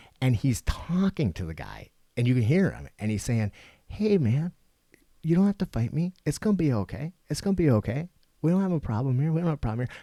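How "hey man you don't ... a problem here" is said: very gentle, calming, soothing tone, higher pitch. Retelling a man soothing the guy he is holding down; imitating a super gentle voice. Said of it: "super gentle".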